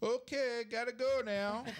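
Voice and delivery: put-on Canadian accent, way up high. Speaker recalls how Doug Melvin ended phone calls, in his Canadian accent. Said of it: "in that Canadian accent".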